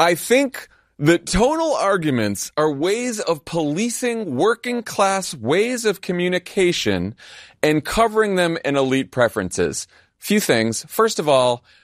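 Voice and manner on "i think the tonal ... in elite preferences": mocking, scolding put-on voice. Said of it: "you sound like the right-wing version of a woke scold".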